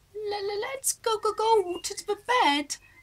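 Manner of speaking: teeth chattering, very high pitch, very slow pace. Someone with frozen feet speaking to a companion at night; teeth chattering. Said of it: "Jan chattered".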